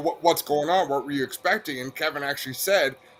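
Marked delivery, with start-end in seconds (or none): none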